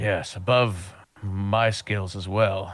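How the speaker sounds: deflated, let-down, disappointed voice. Recounting a scene where Sandro answers about higher-level magic: Sandro, down and disappointed. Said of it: "a down or disappointed voice".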